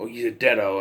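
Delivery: plain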